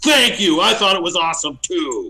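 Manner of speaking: high-pitched, loud yelled voice. Playing a character who yells back thanks after a woman yells at him, Mastic yelling back. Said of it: "Mastic yells back".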